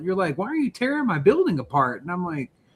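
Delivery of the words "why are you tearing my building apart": furious, pitched-up angry scolding. Retelling how someone scolded them in the kitchen: imitating someone chewing people out. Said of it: "I chewed your ass out".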